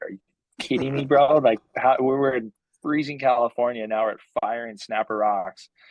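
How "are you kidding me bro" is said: high voice laughing through words in disbelief. Retelling paddling past a perfect wave with a friend: retelling laughing in disbelief. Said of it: "me and Crane just started laughing".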